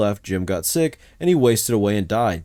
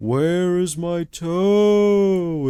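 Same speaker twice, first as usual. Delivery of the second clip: slow, drawn-out groan; 7 semitones higher than usual. Reading a spooky story aloud, the voice comes closer: groaning voice. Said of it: "it groaned".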